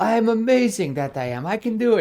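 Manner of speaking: put-on loud, high-pitched shout in old Russian accent. Retelling a Coraline scene, voicing the old man: old Russian voice as Mr. Bobinsky. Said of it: "this old Russian voice like Coraline".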